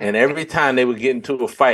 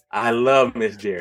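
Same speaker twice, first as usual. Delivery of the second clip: normal talking voice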